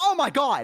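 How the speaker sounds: put-on very high, jolted, startled cry. Retelling how the postman reacted at the door: imitating a startled cry.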